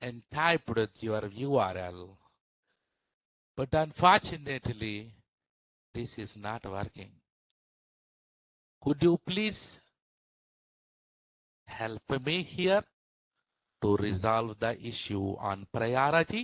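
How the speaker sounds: very slow, deliberate, careful word-by-word delivery. Imitating how a group of people speak, very slow, careful speech. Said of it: "they speak very slow, very slow ... This is how they speak".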